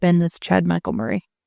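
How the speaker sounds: ordinary talk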